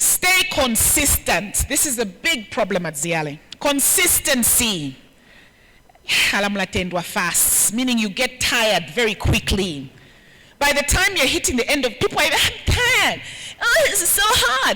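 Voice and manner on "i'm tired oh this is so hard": very high, put-on whiny woman's voice. Describing people tiring and complaining, mock-whiny female voice. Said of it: "I'm doing a, a, a female voice".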